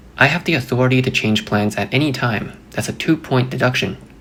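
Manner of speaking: usual speaking voice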